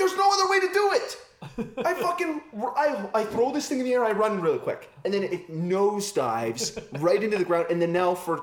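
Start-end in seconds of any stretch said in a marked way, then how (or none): 0.0-1.2 acted yell, much higher pitch, faster. Retelling yelling back at her while they argue, retelling a yell. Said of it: "I'm yelling at her".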